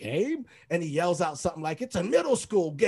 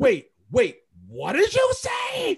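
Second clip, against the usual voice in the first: shout, much higher, much louder, and slower; 9 semitones higher, 6 dB louder than usual. Speaker retells how Musselman reacted during a game: retelling Musselman's loud yell. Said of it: "Like really loud".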